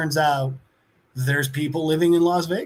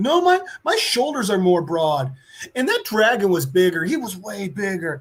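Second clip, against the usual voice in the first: put-on bossy, blustering, barked yell, but contained; 4 semitones higher than usual. Retelling a kid with a crown yelling at a painter: imitating someone yelling. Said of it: "he's yelling at that painter".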